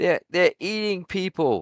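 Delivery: mock yelling. Retelling her yelling at the cops: imitating someone yelling. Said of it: "When she was yelling at 'em".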